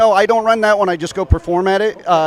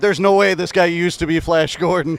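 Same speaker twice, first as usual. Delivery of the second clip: ordinary talk, nothing marked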